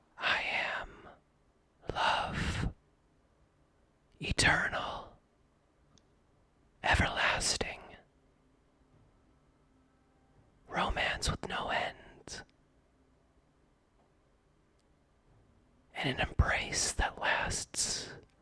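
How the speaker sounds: whispered. Narrating to Alder, the speaker voices a bridal skeleton answering who it is: whispered. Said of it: "utters in a whispered tone".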